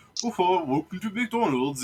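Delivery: put-on thick German accent. Retelling a McDonald's employee's greeting through the speaker, thick German accent. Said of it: "like in his thick German accent".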